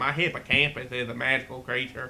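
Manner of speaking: ridiculous put-on woman's voice. Complaining about a woman who kept butting in, the speaker imitates how she talked. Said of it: "And she talked like this".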